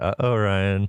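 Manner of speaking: put-on, barely audible mutter under the breath. Speaker showing how she reacts to the listener's shot, imitating a barely audible aside. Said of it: "just loud enough for you to hear".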